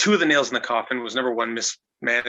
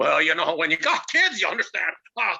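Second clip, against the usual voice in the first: put-on stoned, spaced-out voice; 5 semitones higher than usual. Retelling a phone call, doing Roddy Piper sounding stoned. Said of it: "he always sounded three joints in".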